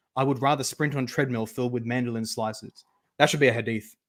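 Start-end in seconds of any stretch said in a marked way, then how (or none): none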